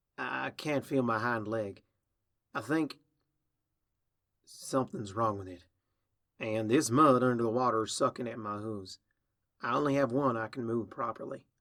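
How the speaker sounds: ordinary delivery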